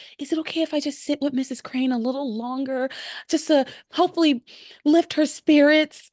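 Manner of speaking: high, sugary, honeyed, syrupy-sweet voice. Speaker retelling a woman's request to a man in front of Pilar, imitating a syrupy-sweet voice. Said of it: "she says it so sweetly".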